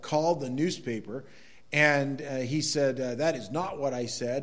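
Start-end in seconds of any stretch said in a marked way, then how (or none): none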